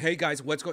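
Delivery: rushed, too-fast delivery. Showing the rushed, nervous way of talking on stage: rushed fast talking. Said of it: "doing it too fast".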